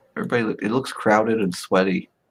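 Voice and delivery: plain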